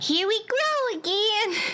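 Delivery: put-on very high-pitched, tiny little girl voice. Recalling a commercial heard while waiting for the bus: tiny little girl voice. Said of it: "this tiny little girl girl's voice saying".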